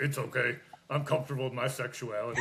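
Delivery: plain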